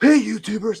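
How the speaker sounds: over-the-top, very high, hyped-up voice. Youtuber tries out a character he might play, over-the-top youtuber greeting. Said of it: "be like one of those characters, over the top".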